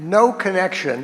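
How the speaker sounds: ordinary delivery, nothing marked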